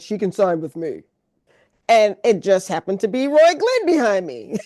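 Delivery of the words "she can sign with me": deep bass voice, dropped low. Retelling an offer heard at a book signing, imitating Roy's deep voice. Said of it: "I heard a deep voice behind me saying".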